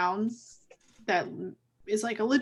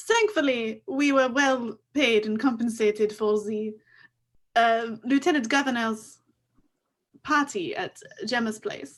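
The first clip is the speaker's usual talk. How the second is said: put-on French accent. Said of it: "Oh, French accents".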